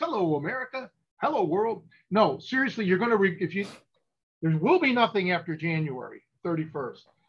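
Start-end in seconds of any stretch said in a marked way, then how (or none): 0.0-1.8 put-on salesman pitch voice, laid on thick. Speaker addressing the audience, in a put-on salesman voice. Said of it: "I should probably use my salesman voice".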